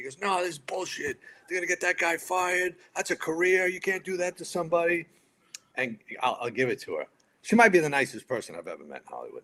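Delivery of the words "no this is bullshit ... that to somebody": play-acted, full-on, high-pitched yelling. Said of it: "here's Johnny Mac yelling at him".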